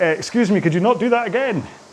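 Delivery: high, complaining voice with Scottish accent. Voicing lower back muscles complaining during a demonstration. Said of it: "I can feel them going".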